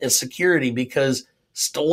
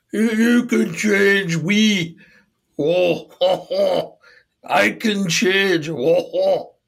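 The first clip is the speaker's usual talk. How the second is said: put-on, badly done French accent, higher pitch; 5 semitones higher, 3 dB louder than usual. Joining the joke, imitating Stallone doing a French accent. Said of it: "Stallone doing a French accent".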